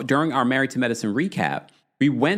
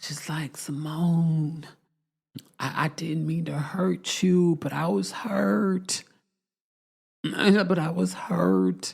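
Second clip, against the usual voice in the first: put-on slow, stretched, drawn-out baby voice; 3 semitones higher, 4 dB quieter than usual. Speaker recounting Heavenly talking to Simone, in Heavenly's baby voice. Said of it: "this is where Heavenly gets into her baby voice".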